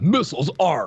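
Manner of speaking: macho, masculine ship computer announcement voice. Imitating the talking boat from Thunder in Paradise: Thunder's masculine computer voice. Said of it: "masculine and testicular as the voice of Thunder".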